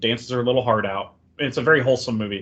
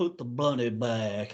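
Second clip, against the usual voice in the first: hushed, very quiet, unplaceable fake Southern accent; 9 dB quieter than usual. Demonstrating how they want to do an impression of a man, really fake Southern accent. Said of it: "that's kind of how I want to do the impression".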